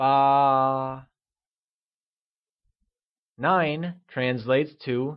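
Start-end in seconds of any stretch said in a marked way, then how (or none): 0.0-1.1 ba held on a flat, high level tone. Explaining how to say the number eight: high level tone on ba. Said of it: "pronounced with a high level tone, like ba".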